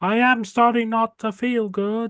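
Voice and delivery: very high, slow, sickly, feeble moan. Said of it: "you hear one of them say in the farther back".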